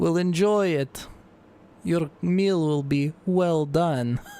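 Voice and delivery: loud booming voice. A voice calls down into the hole at those hiding below: loud booming voice. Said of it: "a loud, booming voice yell out".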